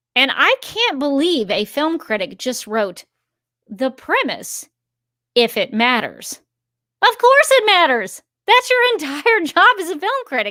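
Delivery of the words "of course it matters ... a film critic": indignant, raised, very high angry voice. Reacting to a film critic's written remark about premise, raised voice. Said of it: "I'm sorry if I'm raising my voice".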